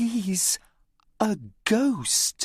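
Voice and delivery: high, private, confiding tone. Reading a story aloud, a girl warns Tom: quiet voice. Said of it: "she says in a quiet voice".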